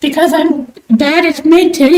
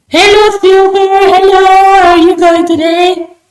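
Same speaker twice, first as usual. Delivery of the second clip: overly enthusiastic, way over the top; 3 semitones higher, 4 dB louder than usual. Greeting a viewer who just joined: overly enthusiastic voice. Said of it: "Why do I sound like that?".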